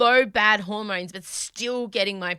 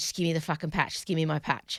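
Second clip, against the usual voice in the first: mock desperate craving, lower and quieter; 5 semitones lower, 5 dB quieter than usual. Retelling begging a doctor for a patch: imitating a desperate druggie. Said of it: "I was like a druggie".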